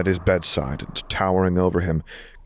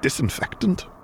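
coughing and sneezing, much higher pitch; 8 semitones higher than usual. A son questions his father about a strong smell, still coughing and sneezing. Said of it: "still coughing and sneezing".

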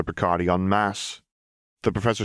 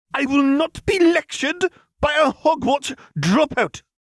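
very high, shrill, drawn-out screech; 6 dB louder than usual. Professor Picardy answers the young man who sneered at him: screeched. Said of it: "screeched Professor Picardy".

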